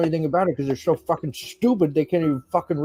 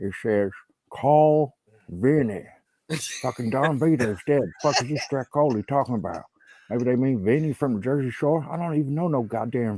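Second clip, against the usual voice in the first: put-on mumble at a lower pitch; 4 semitones lower than usual. Telling a story, the speaker performs a Bam Margera mumble impression. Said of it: "I love the uh, the Bam Margera mumble".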